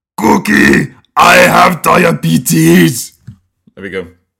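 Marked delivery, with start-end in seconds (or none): 0.2-3.2 drawn-out, high-pitched rasping scream. Showing a voice during a voice exercise: Cookie Monster voice. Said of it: "Cookie Monster sounds like".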